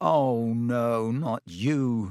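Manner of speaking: very slow, drawn-out, groaning moan. Lying on the field in the rain, he sees someone leaning over him and moans. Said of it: "he moaned".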